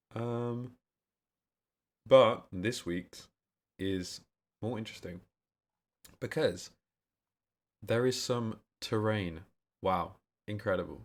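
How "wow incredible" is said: sarcastic-sounding, ironic tone. Speaker reacting to this week's terrain, sounding sarcastic. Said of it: "That sounds sarcastic".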